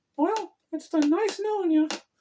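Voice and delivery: squeaked out, high and loud. Retelling turning a toy to look at her, in a poor Mickey Mouse impression. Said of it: "in my poor Mickey Mouse impression".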